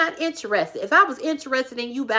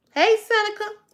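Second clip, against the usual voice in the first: acted-out very high hollered call; 9 semitones higher than usual. Recalling the speaker's baby outside the door at night, imitating someone hollering.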